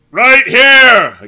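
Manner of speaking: very loud, high-pitched, shrill shout. A kid answers a sarcastic question about missing teammates: shouted, too loud. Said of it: "a kid with glasses shouted".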